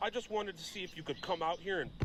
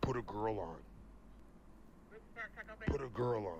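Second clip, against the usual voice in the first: very deep, dropped, very low put-on voice; 7 semitones lower than usual. Prank calling a restaurant, repeating the same line: lowered voice. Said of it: "That voice is awesome".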